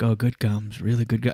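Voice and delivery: put-on man's whisper. Recounting a man rubbing their gums close to their head: imitating his whisper. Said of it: "so he's w- kind of whispering".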